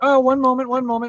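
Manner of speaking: very exasperated and flustered, high and loud. A narrator voices a portly halfling baker rushing around pulling bread from the oven, very exasperated. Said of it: "very exasperated. He's like".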